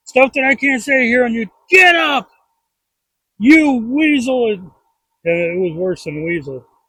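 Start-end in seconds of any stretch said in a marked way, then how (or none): 1.7-4.5 slow, pitched-up, berating drill sergeant voice. Recounting an old coach ordering the speaker up after a fall; imitating a drill sergeant. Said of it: "Like a drill sergeant".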